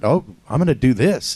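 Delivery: ordinary delivery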